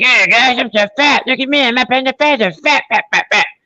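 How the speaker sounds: very high, squeaky, cartoonish character voice. Retelling a movie scene where a player taunts an opponent: imitating Cartman voice. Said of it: "does the Cartman voice to the dude".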